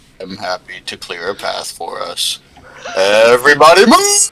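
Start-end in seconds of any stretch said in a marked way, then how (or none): 3.0-4.3 exaggerated hulking giant voice, pitched up. Clearing a path through a line in character: Andre the Giant voice. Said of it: "The most Andre the Giant voice you can think of".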